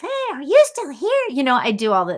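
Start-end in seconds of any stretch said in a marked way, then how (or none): 0.0-1.2 silly, very high-pitched, loud goofy voice. Playfully asking whether a viewer is still there: funny voice. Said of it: "So I used to make these funny voices".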